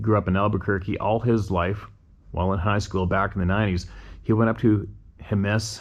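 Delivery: ordinary delivery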